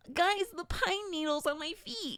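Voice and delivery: goofy, ridiculous, high-pitched dorky delivery. Quoting a ridiculous line from a show character: Quentin voice. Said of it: "we have a Quentin voice".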